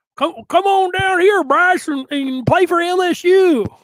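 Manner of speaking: put-on deliberately terrible Southern accent, loud and high. Mocking the coach's pitch to Bryce, Brian Kelly in bad Southern accent. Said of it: "come up with the worst Southern accent".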